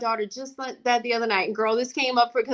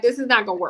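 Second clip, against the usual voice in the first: ordinary talk, nothing marked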